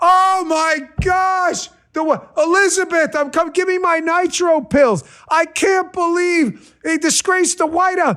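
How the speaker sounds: put-on, very high, scandalized, mocking fake outrage. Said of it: "the leftists with the faux outrage".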